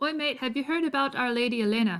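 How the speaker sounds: put-on accent gradually sliding into an Irish accent. A shy new student is approached by Ulrich, in Ulrich's put-on accent drifting Irish. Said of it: "We're getting more Irish".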